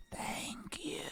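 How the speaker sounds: otherworldly voice. A game master voices what the player Gorple seems to hear: ethereal voice. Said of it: "heard an ethereal voice go".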